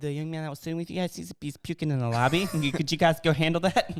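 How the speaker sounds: put-on lady voice. Retelling what the lady at the restaurant came up and said: imitating the lady speaking. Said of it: "Was that your best Japanese impression you have?".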